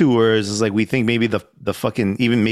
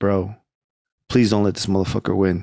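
mock pleading, begging tone; 3 semitones lower than usual. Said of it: "begging him".

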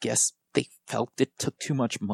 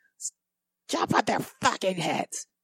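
high, loud screaming voice; 7 semitones higher than usual. Retelling how the upstairs neighbor instructed her kids: imitating a neighbor screaming. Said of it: "I'll never forget her screaming".

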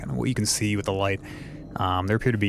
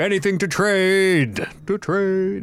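very high, loud, distant shout, trade drawn out; 10 semitones higher, 5 dB louder than usual. Game master voices a hidden speaker answering the party, a voice shouting back. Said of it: "the voice shouts back in common this time".

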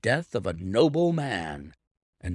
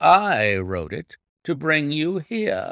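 plain

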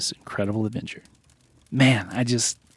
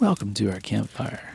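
put-on, mock sultry voice. Welcoming listeners to the campfire, put-on sultry voice. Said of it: "You got a little too sultry on that one".

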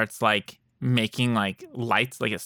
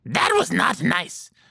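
higher, rough, creaky undead gnome voice; 7 semitones higher than usual. Voicing a gnome's corpse that perks up after an attack: gnome corpse voice. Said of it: "the other corpse of the, the gnome, uh, perks up".

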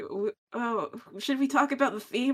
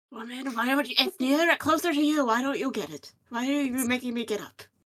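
put-on cranky old-man character voice. Playing one half of an old married couple with Rachel, grumpy old man voice. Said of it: "I am your grumpy old man".

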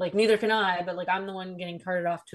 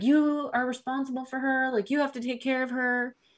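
high, pitched-up yell; 6 semitones higher than usual. Retelling the night the parents fought at the door: imitating mom yelling. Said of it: "my mom's, like, yelling".

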